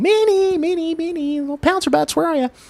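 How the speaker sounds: very high, calling-out voice. Retelling searching outside for a missing cat: retelling calling out for a cat. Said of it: "here I am doing the old".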